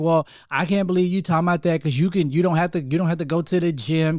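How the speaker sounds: plain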